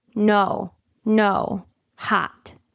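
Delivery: grave, very serious delivery. Speaker acts out a toddler speaking aloud to nobody, in a toddler's very serious voice. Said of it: "in a very serious voice".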